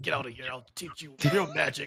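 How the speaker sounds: tense, effortful voice. Game narrator voicing Coach, who struggles in the background, straining. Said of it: "Coach is in the background struggling".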